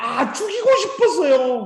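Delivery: anguished, high, slow, shouted cry.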